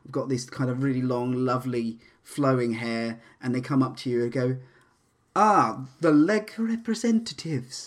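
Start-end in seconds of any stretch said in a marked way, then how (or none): 5.3-7.9 high, laid-on, fake female voice. Acting out a character who walks up to you, in a put-on woman voice. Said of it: "this is my woman voice".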